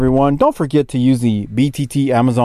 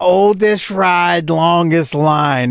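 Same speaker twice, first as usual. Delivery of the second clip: put-on drunk slurring, slower pace; 3 semitones higher than usual. Speaker quotes a drunk man's advice to him, imitating drunk slurring. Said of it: "he's shit-faced as he says it".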